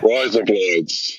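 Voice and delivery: Aussie pronunciation. Teaching the others to say razor blades: Australian pronunciation. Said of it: "That's how you say razor blades in Australia".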